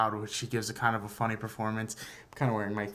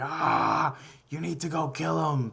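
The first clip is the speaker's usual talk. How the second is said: put-on high, stretched-out, drawn-out yelling; 6 semitones higher, 4 dB louder than usual. Describing an actor's film performance, acting out his yell: retelling a yell. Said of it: "you have him yelling like".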